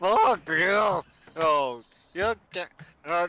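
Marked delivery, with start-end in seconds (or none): 0.0-1.0 acted drunk, angry brawler voice, louder. Playing a character just thrown out of a bar fight: acting drunk and angry. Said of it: "you're drunk and just got back from a bar fight".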